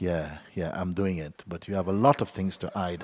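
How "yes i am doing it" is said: mock insincere tone, slower pace. The speaker describes someone only pretending to do their practice: mock-insincere voice. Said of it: "[imitates insincere voice]".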